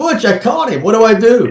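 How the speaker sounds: shrill, very high, desperate shouted scream. Retelling screaming for a fellow rider in the woods, retelling a scream. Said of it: "I'm screaming at his name".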